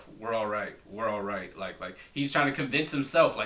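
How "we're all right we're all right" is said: hushed, half-whispered mutter. Retelling a clip of Jimmy Butler on the sideline: imitating Jimmy Butler half-whispering. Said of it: "kinda whispering to himself".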